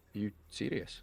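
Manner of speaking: sassy, cutting, in-your-face tone. Retelling a complaint to a delivery service: retelling own sassy retort. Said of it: "Now I'm just being sassy to the guy".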